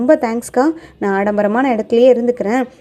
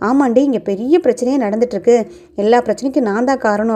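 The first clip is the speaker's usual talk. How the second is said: ordinary delivery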